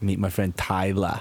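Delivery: slow, drawn-out mock Boston accent.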